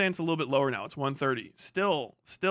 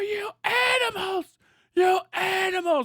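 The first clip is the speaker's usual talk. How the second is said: very high, shrill, frantic, drawn-out freak-out; 5 dB louder than usual. Describing a lady freaking out over a public figure, imitating her freaking out. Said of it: "freaking the fuck out".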